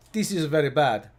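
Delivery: put-on Italian accent. Retelling a car ad's mechanic: imitating an italian mechanic. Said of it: "typical Italian mechanic".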